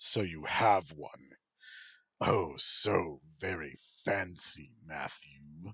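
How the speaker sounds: low, rumbling mocking voice. Reading a story, the narrator voices Railshaw the king taunting Matt: Railshaw's low, rumbling taunt. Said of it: "the king taunted in a low, rumbling voice".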